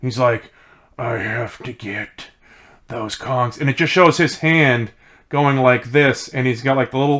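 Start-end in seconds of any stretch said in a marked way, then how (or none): 1.0-3.6 slow, drawn-out, goofy cartoon villain voice. Describing the villain in a game: imitating Dr. Claw-style villain. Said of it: "the claw from, um, Inspector Gadget".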